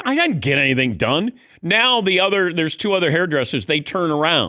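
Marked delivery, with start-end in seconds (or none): 0.0-1.3 mock firm, emphatic, insistent, pressed harder. Retelling a denial to a hairdresser: retelling saying it louder. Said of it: "then I got kinda louder".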